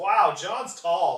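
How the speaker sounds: put-on slow, loud, amazed little-kid toddler voice.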